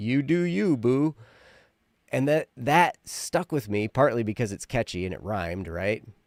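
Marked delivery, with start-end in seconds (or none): 0.0-1.1 slow, teasing, sarcastic. Retelling an ex laughing at something they shared; imitating a sarcastic jab. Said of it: "just said kind of sarcastically".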